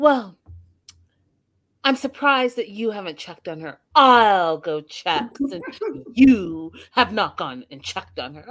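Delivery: snide, snarky, sniping tone. Retelling what a friend said on the show: imitating Randy being snarky. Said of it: "her friend Randy got a little bit, like, snarky".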